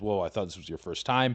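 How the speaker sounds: normal talking voice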